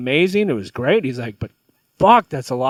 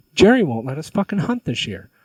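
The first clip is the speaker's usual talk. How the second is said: put-on furious ranting, fake anger; 3 semitones higher than usual. Retelling a joke where a hunter pretends to be furious: retelling a fake angry outburst. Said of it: "he looks all fucking pissed off".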